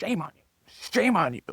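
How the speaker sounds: shrill, very high, rapid scolding tone. Recalling how a former boss talked to his dogs: imitating scolding a dog. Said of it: "you talk to his dogs like that".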